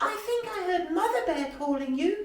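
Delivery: squeaked out, very high-pitched. Reading a children's story, the narrator voices Mouse calling to his friend: squeaky Mouse voice. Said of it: "Mouse's squeaky voice".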